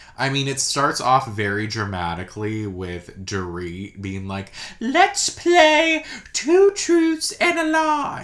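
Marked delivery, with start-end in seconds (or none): 4.8-8.3 very high, slow, fake British accent. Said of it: "It's like a fake British accent".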